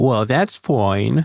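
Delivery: derisive, mocking, sarcastic delivery. Asked to try the line once more, saying it with a mocking tone. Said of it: "Now it sounds even more like you're mocking me".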